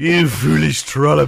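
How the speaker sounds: very loud, rasping, rough devilish little villain voice. Retelling what a comic villain said, in a satanic little villain voice. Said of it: "all my villains now sound like that".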